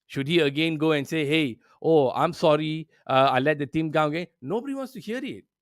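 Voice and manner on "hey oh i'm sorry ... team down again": plain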